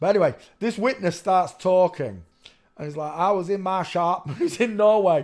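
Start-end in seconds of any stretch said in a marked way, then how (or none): 3.1-4.3 slow, put-on rural American drawl. A speaker quotes a witness living in Norway, in an American redneck accent. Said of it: "I'm doing a redneck accent for him".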